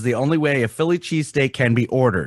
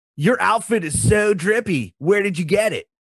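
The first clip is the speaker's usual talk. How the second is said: stoner-style talk with raised pitch; 8 semitones higher than usual. Complimenting someone's outfit with slang, in a Spicoli voice. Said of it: "Why do you talk Spicoli".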